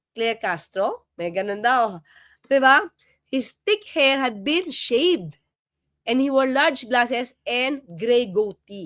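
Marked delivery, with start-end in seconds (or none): 0.2-1.1 Castro lifted with a questioning rise. Retelling how someone said their name with a question mark: question-like rise on Castro. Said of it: "may question mark".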